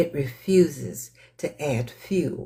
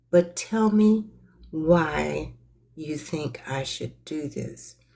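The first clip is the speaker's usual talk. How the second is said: very soft, hushed voice with "why" drawn out; 2 semitones higher than usual. Retelling own reply to someone who was ranting: imitating own soft voice. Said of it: "very soft".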